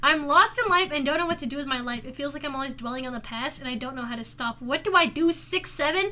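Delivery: ordinary talk, nothing marked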